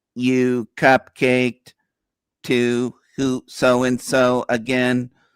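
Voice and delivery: very slow, flat, droning sixties robot voice. Imitating people who keep repeating the same line, Dalek voice. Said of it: "in that nineteen sixties robot voice".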